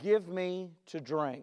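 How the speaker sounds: soft, gentle, kind, compassionate tone. Retelling the story, voicing the one who asks her for a drink, kind and compassionate. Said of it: "in a kind, compassionate way".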